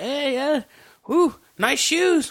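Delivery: play-acted drunken babble, very high, drawn-out. Recapping a film scene where a character pretends to be drunk; acting drunk. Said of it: "he acts drunk".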